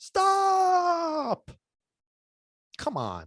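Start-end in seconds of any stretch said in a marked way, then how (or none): 0.0-1.5 very high put-on scream, drawn out at the end. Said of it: "They scream, right?".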